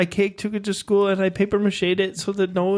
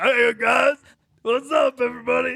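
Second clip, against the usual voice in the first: noticeably changed voice, pitched higher; 4 semitones higher than usual. Greeting everyone after jumping toward the sky: noticeably different voice. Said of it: "You sound so different".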